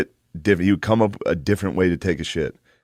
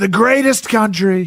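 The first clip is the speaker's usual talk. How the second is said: very high, loud, proclaiming voice; 14 semitones higher, 5 dB louder than usual. Showing how to do the rally speech: Donald Trump rally voice. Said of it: "the easiest way to do Trump".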